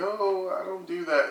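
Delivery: crying, weepy, high and slow tearful voice. Retelling a reality show scene: imitating Kim Fields crying.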